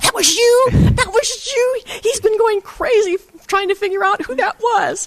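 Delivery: very high, loud, excited cry. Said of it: "he went".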